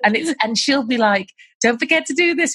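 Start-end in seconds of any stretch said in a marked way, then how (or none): 1.6-2.5 put-on American accent, pitched up. Quoting a girl from her videos, in a put-on american accent. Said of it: "She's doing it in an American accent".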